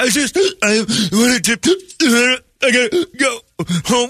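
put-on drawn-out, very high blubbering cry. Retelling own past words after crying hard: imitating own past crying. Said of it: "Why are you crying so hard?".

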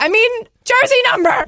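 mock furious, very high-pitched, angry delivery. Retelling how he corrected himself in anger: imitating an angry correction. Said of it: "he was so angry that he was like".

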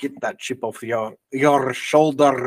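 put-on Scottish accent. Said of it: "in a Scottish accent".

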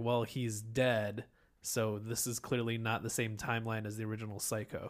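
ordinary talk, nothing marked

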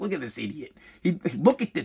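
put-on disdainful tone. Retelling how a father greeted his kid: imitating father's disdain. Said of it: "my father looked at me with, like, disdain".

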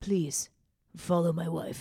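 mock ranting delivery. Retelling a public tirade about following a wife: Alec Baldwin impression. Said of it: "You do a good Alec".

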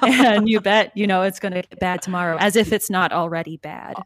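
ordinary talk

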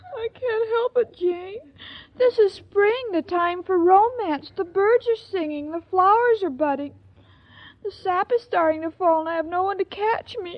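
high, tearful weeping through the words. Answering jane's plea not to carry on, crying. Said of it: "now don't cry, honey".

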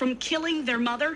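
usual speaking voice

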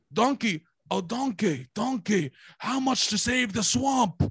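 high cartoonish voice. Doing a Shrek impression for the others. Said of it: "I'm good at Shrek".

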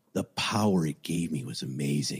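put-on very low woman's voice. Retelling what a blood-covered woman said when police arrived at her flat, in Young's very low voice. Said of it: "She said it with that voice".

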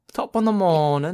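put-on Australian accent, high. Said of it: "Natalie Tran impersonation?".

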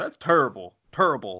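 showy, flamboyant sports-announcer call. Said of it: "I like for Chuck".

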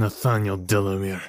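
stammering, stuttering through gritted, clenched teeth. Held at gunpoint and asked his name, stammering through gritted teeth. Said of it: "stammered through gritted teeth".

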